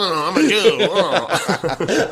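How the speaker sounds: laughing, high-pitched mock voice.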